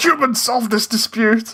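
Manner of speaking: irate, angry, commanding and demanding outburst. Reacting to a line they love, the speaker repeats it; mock-angry Papyrus impression. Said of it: "he sounds so angry".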